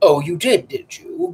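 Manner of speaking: growled, low, skeptical, doubting. The Professor answers Lucio's jest about the tableau; growled. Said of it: "growled the Professor".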